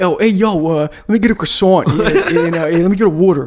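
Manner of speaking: put-on Philadelphia guy accent. Picturing a Philly guy at a Louvre concession stand: imitating a Philly guy accent. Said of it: "some Philly guy at".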